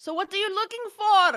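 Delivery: high, loud yell, projected as if across distance. A player steps forward to address the creature, yelling out to a creature. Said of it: "I'm gonna yell out to the creature".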